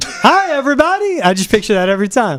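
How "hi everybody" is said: very high-pitched cartoon voice. Chatting with a host about his show greeting, in a Doctor Nick voice. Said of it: "Doctor Nick from The Simpsons".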